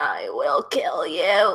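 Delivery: very deep, menacing demon voice. Showing the best voice the speaker can manage, demon voice. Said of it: "I can kind of do a demon voice".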